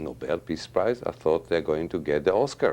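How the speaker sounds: normal talking voice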